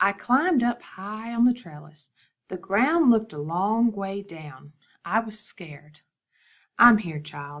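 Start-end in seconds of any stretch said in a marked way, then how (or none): 6.8-7.6 steady, soft voice, lower pitch. Grandma speaks to the scared child up on the trellis, steady and soft. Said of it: "Her voice was steady and soft".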